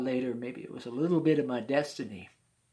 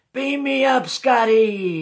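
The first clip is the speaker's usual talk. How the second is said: high, loud, hollered shout. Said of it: "and I holler".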